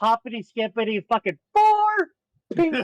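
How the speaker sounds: slow, bouncy, cheery, giddy sing-song lilt, rising. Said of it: "walk up with a big smile, like".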